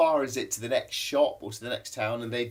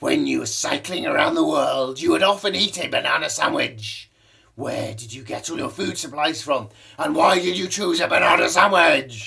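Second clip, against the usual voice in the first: loud, rough, creaky voice; 3 semitones higher, 6 dB louder than usual. Reading out a question sent in by Isabella: imitating Isabella's voice. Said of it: "I think this is probably how Isabella speaks".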